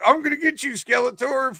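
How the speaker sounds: very high, playful make-believe voice. Retelling answering the father while pretending to play with He-Man toys: retelling pretend toy play. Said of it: "Act like I was playing with my He-Man guys".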